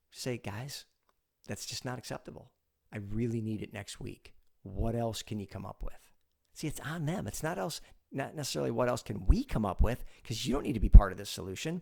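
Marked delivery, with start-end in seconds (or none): 0.4-6.0 gentle, soft, quiet and unhurried. Showing how to push back on a two-week delay, slow and quiet. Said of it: "in a slow and quiet manner".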